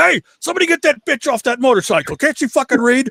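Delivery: mock sudden, furious, very high-pitched angry yell. Retelling Evel Knievel suddenly shouting about a woman on his motorcycle: imitating Evel Knievel's angry yell. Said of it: "he's calm, ... all of a sudden he goes".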